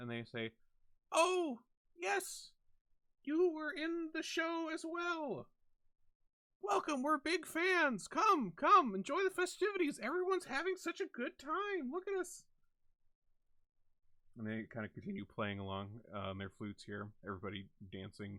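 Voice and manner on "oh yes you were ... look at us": tiny, very high-pitched, raised voices. Narrator voicing two figures in the circle welcoming a newcomer, in small, high voices. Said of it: "these kind of small, high voices".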